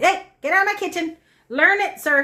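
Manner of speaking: very high, loud, stern, scolding mean mama voice. Scolding a pet who walked into the kitchen: mean mama voice. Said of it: "my mean mama voice".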